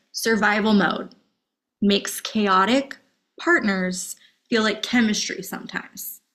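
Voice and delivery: measured, spelled-out delivery. Speaker repeats a point to listeners so it sinks in, said a little slower. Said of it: "let me say that again a little slower".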